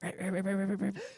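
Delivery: rapid quiet whisper. Retelling an anime scene, acting out Krauser's rapid whisper.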